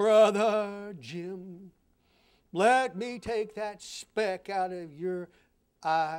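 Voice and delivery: slow delivery, every word stretched out. Giving listeners an imitation of the Pharisee speaking to his brother: imitating the Pharisee. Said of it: "here is my imitation of the Pharisee".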